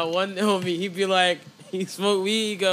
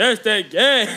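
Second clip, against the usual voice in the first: loud, put-on signature delivery; 2 semitones higher, 6 dB louder than usual. Imitating a friend's catchphrase again: imitating a friend's very deep voice. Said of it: "his voice gets dumb deep when he says it".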